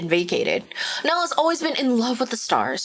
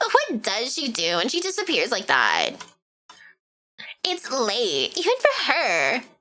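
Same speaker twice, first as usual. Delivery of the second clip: sing-song put-on Valley Girl voice. Reader voicing a book passage in a Valley Girl voice. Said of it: "read this in a Valley Girl voice".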